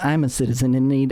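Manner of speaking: under-breath whisper. Retelling what a merch seller muttered during his pitch; retold under-breath whisper. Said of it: "he kind of whispers".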